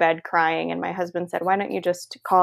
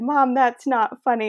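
tearful, crying voice, higher pitch; 6 semitones higher than usual. Speaker retelling a phone reply to Mom's joke, retelling words said through tears. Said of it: "through my tears and I said".

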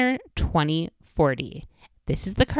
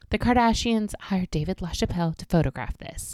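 put-on breathless, enthusiastic voice. Acting out how an artistic enthusiast reacts to the card, imitating breathless speech. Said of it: "and say breathlessly".

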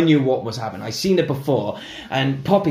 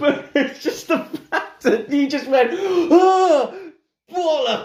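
very high, giggles spilling into the words. Retelling a story of a scared cinema-goer, laughing while talking. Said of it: "I don't know why I'm laughing".

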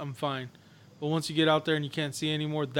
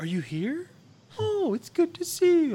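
put-on mocking overly friendly tone, higher and louder; 13 semitones higher, 5 dB louder than usual. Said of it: "that fake nice bullshit".

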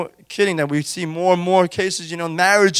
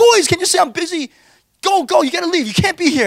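put-on, very high, shrill half-yelling; 11 semitones higher, 4 dB louder than usual. Retelling how he tells his boys to leave, imitating yelling at them. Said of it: "just kinda yell at them".

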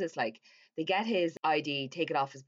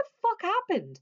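high, loud, panicked, freaked-out blurted outburst. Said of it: "Hannah's freaking out".

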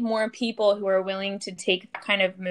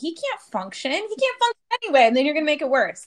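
acted-out heated raised voice, higher; 6 semitones higher than usual. Retelling an argument with a psychiatrist in a staffing meeting: retelling own raised-voice argument. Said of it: "a raised voice argument".

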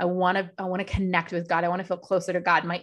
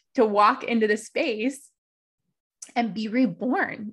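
on the verge of crying, higher pitch; 4 semitones higher than usual. Describing the intention behind a shared space, tearing up. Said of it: "I'm gonna cry again".

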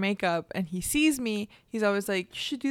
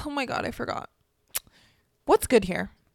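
put-on sassy, bratty voice; 2 semitones higher than usual. Retelling how a customer walked in and asked: imitating a sassy customer. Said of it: "He's sassy".

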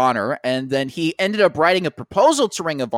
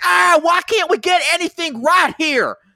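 mock scream, higher, louder and slower; 4 dB louder than usual. Retelling what Jim yelled outside while they watched, imitating Jim screaming. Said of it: "Jim was outside screaming at the top of his lungs".

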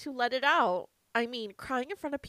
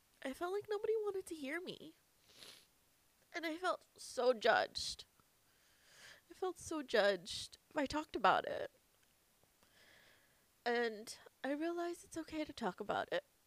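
soft, tearful speech through crying; 3 semitones higher, 7 dB quieter than usual. Speaker talks about what they have been through: crying while talking. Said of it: "That's why I'm crying".

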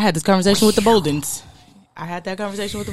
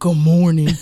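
loud, put-on, mock-manly voice; 4 semitones lower, 6 dB louder than usual. Saying good morning with his stepdad voice on: put-on stepdad voice. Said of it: "I got my stepdad voice on".

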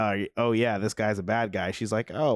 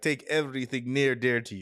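lightly done put-on Russian accent, faint; 3 semitones higher than usual. Quoting a man's threat, the speaker gives him a slight Russian accent. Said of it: "giving him like a slightly Russian accent".

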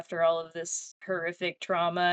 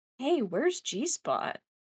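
put-on sincere concern, much higher pitch; 7 semitones higher than usual. Retelling how a man asks where the cat went, imitating sincere concern. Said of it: "with like palpable concern".

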